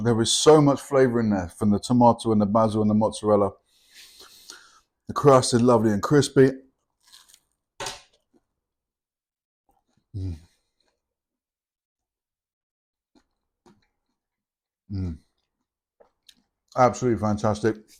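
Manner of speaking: talking with mouth full. Tasting a freshly made pizza and describing it, talking with mouth full. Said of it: "Excuse me for talking with my mouth full".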